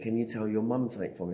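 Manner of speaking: normal talking voice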